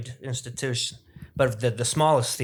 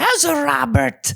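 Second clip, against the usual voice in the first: put-on Italian mother voice, higher and louder; 7 dB louder than usual. Retelling what the mother said about meeting a guest: imitating Joey's mom. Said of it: "that's not an impression".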